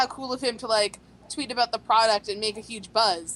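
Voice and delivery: ordinary talk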